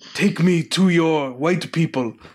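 put-on crude caricatured patois accent. Retelling a voice heard in the movie, imitating a racist patois. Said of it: "a racist patois going".

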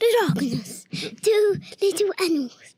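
nature documentary narrator voice. Answering a request to do the voice: David Attenborough voice. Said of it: "Can you do a David Attenborough voice?".

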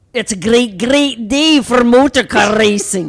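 put-on Irish accent, very loud and high-pitched. Friends taking turns doing accents, someone offers a line: Irish accent. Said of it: "we should do our accents".

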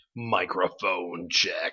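tight, straining tone. Doing a mic check in a new voice for the podcast, strained, about-to-throw-up voice. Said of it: "like you're gonna throw up or explode".

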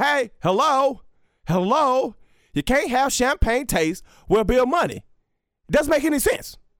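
pushy, high lecturing voice. Imitating a favorite rant he loves to quote: Herm Edwards voice. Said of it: "I love how he says, like".

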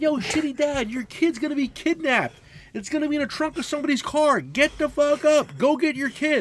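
shrill, very high-pitched yell. Recounting yelling at a father in the arena to go get his kid; retelling his own yell. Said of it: "I'm yelling the whole time".

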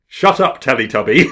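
very loud, high-pitched yelled shout. Retelling a spat in Parliament where a member stood up: imitating someone shouting. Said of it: "standing up and shouting".

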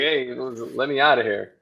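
normal talking voice

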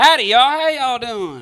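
loud yelling. Coming in through the door, a newcomer greets everyone, yelling. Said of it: "you're yelling, sir".

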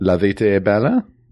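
poorly done Italian accent. Saying an Italian film title in Italian: bad Italian accent. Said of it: "my Italian accent is the worst".

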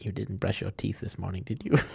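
whispered speech. Playing a character who whispers back to a companion: whispering back. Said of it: "he whispers back".

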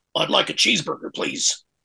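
put-on, attempted American accent. Retelling how someone orders a cheeseburger: put-on american accent. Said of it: "that's your American accent".

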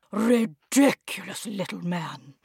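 low, grumbled mutter under the breath. The Dame reacts to a man eating a whole egg, shell and all: muttered under her breath. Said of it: "under her breath".

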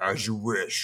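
mechanical, robotic dark villain voice. Imitating a character's line from the show: robotic dark side bad guy voice. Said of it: "it's just a very robotic, like".

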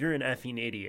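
put-on angry scolding tone. Retelling how granny reacts to something stupid: imitating granny scolding. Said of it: "totally chewed me out for it".

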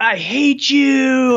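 shrill scream, pitched very high. Retelling what the second son yelled during a fight: imitating a son screaming. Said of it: "screaming and like".

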